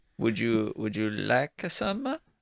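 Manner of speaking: put-on Italian accent. Voicing the barkeep offering food to a player: Italian accent. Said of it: "Why are they all Italian?".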